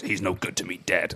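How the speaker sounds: put-on low, soft voice with American accent.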